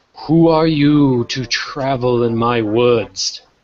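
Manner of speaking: echoing, mystical voice of an ancient oak. Telling a story, the speaker voices an ancient oak tree questioning a traveller: echoing, mystic tree voice. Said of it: "you hear this echoing, mystic voice".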